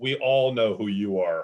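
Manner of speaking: acted flat, deadpan line. Retelling what a second voice over the drive-through speaker said: imitating a deadpan voice. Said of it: "in a very deadpan voice".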